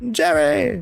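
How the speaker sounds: very high, squeaky, badly done sitcom-style character voice. Calling out 'Jerry' as a bad Costanza impression. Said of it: "my bad impression of Costanza from Seinfeld".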